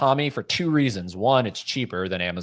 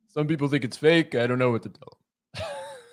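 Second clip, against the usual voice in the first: half-hearted, loose put-on Brooklyn accent; 3 semitones higher than usual. Repeating the other speaker's words back, in a quasi Brooklyn accent. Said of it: "giving me some like quasi Brooklyn thing".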